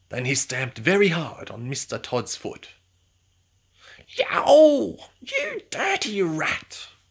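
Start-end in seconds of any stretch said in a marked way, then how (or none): 4.1-6.8 very high, very slow, drawn-out yowling yelp. Mr. Todd reacts after Samuel stamps hard on his foot, yelped. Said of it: "yelped Mr. Todd".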